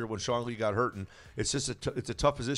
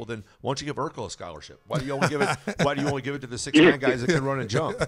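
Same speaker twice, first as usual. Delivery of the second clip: loud, cynical, needling sarcastic retort; 3 semitones higher, 7 dB louder than usual. Retelling own reply to a claim about helping youth: retelling own sarcastic retort. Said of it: "I'm a sarcastic, cynical person. I said".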